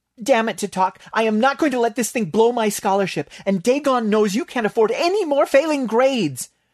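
breathless, panting, very high, almost hysterical. A character in the story turns on a friend; panting, almost hysterical. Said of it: "Bailey panted, almost hysterical".

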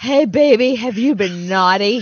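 mock drunken man's voice. Retelling walking home past men in Santa suits: imitating a drunk guy in a Santa suit. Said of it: "drunk guys in Santa uniforms being like".

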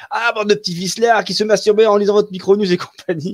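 high, loud, yelling put-on little old lady voice. Recalling the magazine's Tante Eulalie column, imitating Tante Eulalie yelling. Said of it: "qui hurlait".

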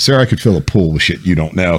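acted, completely serious, grave delivery, no hint of joking. Retelling an answer to the battalion commander: imitating own dead serious delivery. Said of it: "dead on serious as hell".

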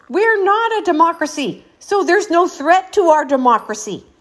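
acted-out, re-enacted screaming and yelling. Speaker acts out their own past reaction, retelling screaming. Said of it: "And I'm like screaming".

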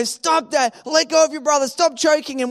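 put-on yelling voice. Retelling how mom yelled at the kids, imitating mom yelling. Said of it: "She would be yelling at us".

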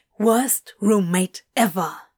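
low, hissed, sibilant grumble. Hit in the face by a pillow, he hisses at his companion. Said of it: "he hissed".

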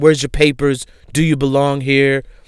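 ordinary delivery

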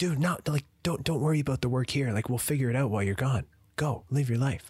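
punchy, passionate, energetic, high with hard stresses. Retelling the boss's reply about the work: imitating boss's energetic talk. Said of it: "just very energetic and stress on his sentences".

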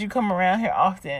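ordinary talk

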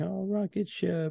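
put-on very high, soft, little childish whine. Retelling a little boy denied his rocket ship tonight, imitating a child whining. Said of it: "he was kind of like whining".

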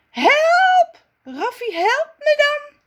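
very high shriek, first word stretched. Sasa calls to Raffi from the cherry tree, screeching. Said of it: "Sasa krijst nu".

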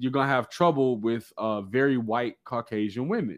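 usual speaking voice

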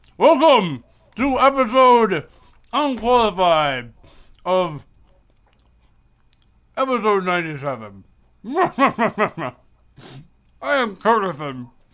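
talking with mouth full. Host opens the podcast episode while talking with his mouth full. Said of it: "the biggest bite of food you possibly could".

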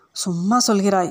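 plain

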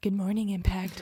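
creepy-sounding voice. Retelling own greeting that was played back on video: imitating own creepy-sounding voice. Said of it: "It was so creepy sounding".

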